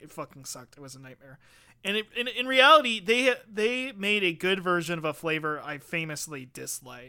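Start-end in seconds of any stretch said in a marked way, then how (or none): 0.0-1.4 mumbled under breath, lower and quieter. Acting out an imagined review aside, muttering under breath. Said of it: "under our breath being like".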